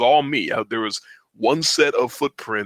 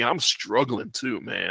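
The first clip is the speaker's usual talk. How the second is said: ordinary talk, nothing marked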